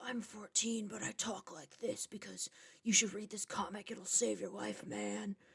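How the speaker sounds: hushed, hardcore tough-guy voice. Speaker mocks how the Frog Brothers are introduced, doing a Frog Brothers deep voice. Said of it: "deepen their voice really low".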